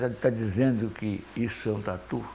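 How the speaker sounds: stress placed on the word dizendo. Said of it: "quando eu ouvi essa voz".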